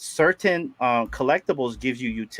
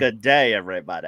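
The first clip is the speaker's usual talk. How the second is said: fake, put-on Australian accent; 6 semitones lower than usual. Joking about taking over a stream, greeting viewers: put-on Australian accent. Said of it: "You gotta get the Australian ready".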